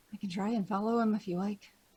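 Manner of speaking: hushed, very quiet word. Offering a companion in the party to follow someone: speaking very quietly. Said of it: "I'm gonna very quietly say".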